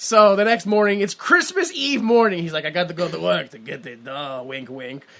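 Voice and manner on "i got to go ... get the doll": put-on drifting Austrian accent, low and quiet. Retelling what he said on Christmas Eve morning, in an Arnold Schwarzenegger accent. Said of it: "Where is that accent going? ... it's starting out as Schwarzenegger".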